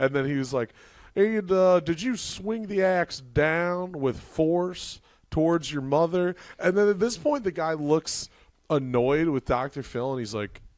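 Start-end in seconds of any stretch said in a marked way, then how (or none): 1.1-6.4 slow, drawn-out, sinister evil-sounding voice, pitched up. Retelling an interviewer questioning an axe killer: imitating Doctor Phil sounding evil. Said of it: "he's talking like the most evil guy ever".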